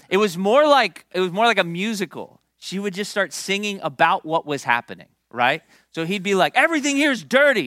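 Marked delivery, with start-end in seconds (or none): 6.5-7.6 mock, high-pitched complaining, griping yell. Retelling how a man came in yelling: imitating someone yelling. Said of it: "he would come in yelling".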